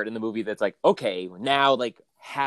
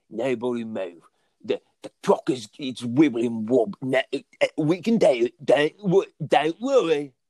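put-on London accent, higher and slower; 3 semitones higher, 3 dB louder than usual. Quoting the original Italian Job, doing a Michael Caine impression. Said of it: "with that accent".

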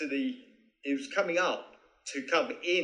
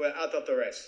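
put-on Finnish accent. Retelling what someone said when waking him in his cabin, Mika's Finnish accent. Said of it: "That's my Finnish accent".

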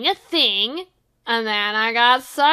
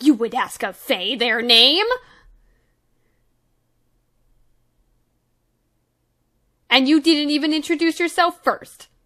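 huffy, affronted, offended scoff; 3 semitones higher than usual. A freed fae creature answers the party asking its name, offended scoffing. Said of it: "And he like scoffs, like offended".

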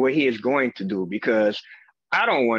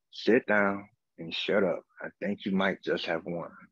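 lower, quieter, hushed muttering under the breath; 4 semitones lower, 7 dB quieter than usual. Retelling what the lawyer said while standing up: imitating someone muttering under breath. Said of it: "under his breath".

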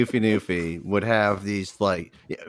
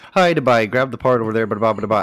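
put-on Newfoundland-accented speech; 4 dB louder than usual. Retelling how a coworker talked at the parts counter: imitating Steve's Newfoundland accent. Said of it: "We call him Steve the Goofy Newfie".

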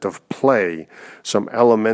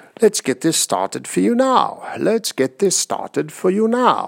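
silly put-on British accent, pitched up; 9 semitones higher than usual. Guiding listeners through a silly repetition exercise, in a goofy British accent. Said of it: "in a really goofy British accent".

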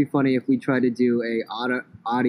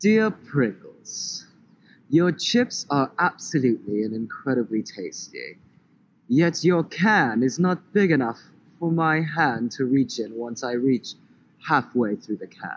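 put-on British accent. Giving a made-up example of a funny complaint letter to a chip brand, in a British accent. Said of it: "He did it in his amazing British accent".

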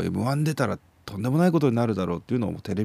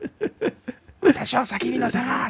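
mock very high, very slow, drawn-out angry yell. Retelling a manners teacher scolding a comedian at an elevator: imitating an angry Kansai-dialect yell. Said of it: "っつって".

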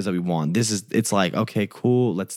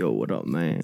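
very deep, very low voice; 7 semitones lower, 4 dB quieter than usual. Retelling a phone call from a caller: imitating a deep voice. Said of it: "he has a very deep voice".

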